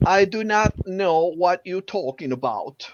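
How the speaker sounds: put-on British accent. Answering a request to give a try: british accent. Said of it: "really good doing the British accent".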